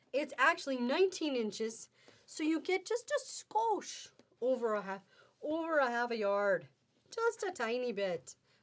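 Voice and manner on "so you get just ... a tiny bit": Scottish brogue. Measuring a piece of fabric, speaker slips into a scottish brogue. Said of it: "I've switched into Scottish brogue".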